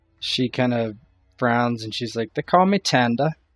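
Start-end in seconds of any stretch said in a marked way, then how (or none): 2.3-3.3 put-on lower-class, low-born accent. Voicing a serving woman who gives her name: low-born accent. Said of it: "sort of a kind of a low accent, low-born accent".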